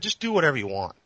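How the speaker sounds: normal talking voice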